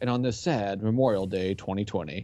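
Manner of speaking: mock newscaster voice, somber and sad. Teasing the other speaker about how they sounded, mock somber news broadcaster voice. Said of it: "it sounded like some news broadcaster from like one of those like nationwide one who has nothing but like disappointing, sad news".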